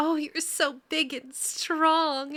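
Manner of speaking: high, slow, drawn-out, gushing airhead voice. Retelling the players' in-character lines from a campaign: imitating a ditzy character voice. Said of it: "and just total ditzy".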